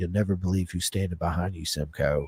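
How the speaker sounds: whispering. Recounting what someone leaned in to say just before the start, retelling a whisper. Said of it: "why are you whispering?".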